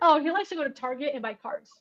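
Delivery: sudden return to calm, normal everyday voice. Mocking her quick switch from crying to normal: imitating her suddenly calm voice. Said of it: "her voice immediately goes back to normal".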